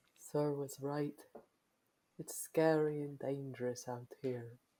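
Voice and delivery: very quiet half-whisper under the breath. Voicing a character about to fall asleep: half-whispering to himself in character. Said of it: "sort of whispers to himself".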